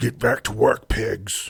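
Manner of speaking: grunting hog voice. A game master voices the hell hog in charge ordering its workers: grunting hell hog voice. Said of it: "as it like grunts and says".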